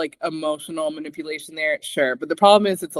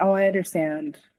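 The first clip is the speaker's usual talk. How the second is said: timid, meek, submissive, humble little voice; 2 semitones higher than usual. Retelling a cast member's reply after being confronted: imitating a meek voice. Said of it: "all meek and stuff".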